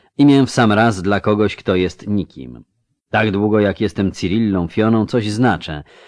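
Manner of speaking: plain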